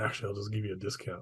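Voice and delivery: dropped to a hushed aside. Voicing a character who offers a discount after a loud welcome, much quieter voice. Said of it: "in a much quieter voice says".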